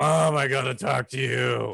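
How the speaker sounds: gruff, scraggly voice. Recalling a cartoon scene where an allergic reaction changed Candace's voice: Candace's gruff, scraggly voice. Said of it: "doing that gruff, scraggly voice".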